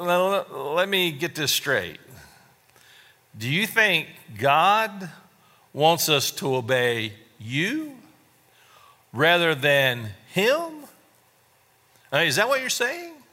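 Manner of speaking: openly sarcastic, swooping tone. Retelling the apostle Peter answering the council: imitating Peter's sarcasm. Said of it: "you could just hear the sarcasm in this".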